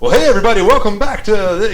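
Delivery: very loud, high-pitched cheesy top-forty DJ. Recalling the radio host guy at the show, in a cheesy top-forty radio host voice. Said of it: "he was real like you know cheesy top forty kind of like".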